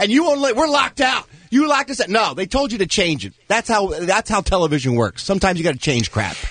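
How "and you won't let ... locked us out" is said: high mock outraged yelling. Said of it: "And the".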